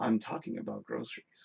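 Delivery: dead calm, hushed whisper. Rereading a viewer's chat message aloud, this time very calmly. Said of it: "I'm gonna say that very calmly".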